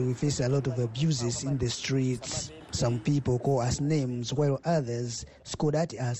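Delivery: ordinary talk, nothing marked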